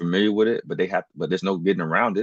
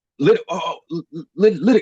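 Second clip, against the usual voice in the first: mock stammering, higher and louder; 10 semitones higher, 5 dB louder than usual. Retelling how nervous clerks answer him: imitating someone stuttering. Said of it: "they start stuttering like a motherfucker".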